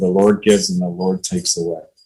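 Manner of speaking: ordinary delivery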